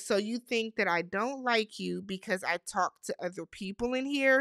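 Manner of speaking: ordinary delivery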